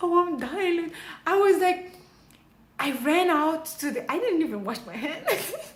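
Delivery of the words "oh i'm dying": crying voice, higher pitch. Retelling sitting alone in the toilet: imitating own past crying.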